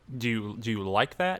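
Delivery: plain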